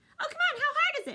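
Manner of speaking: tiny squeaky rabbit voice, very high and loud. Telling the story, the speaker voices the bunny perched on wet hay in a squeaky bunny voice. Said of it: "I gotta do my squeaky".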